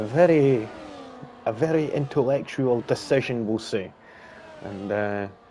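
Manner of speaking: sarcastic, leaning hard on the word "very".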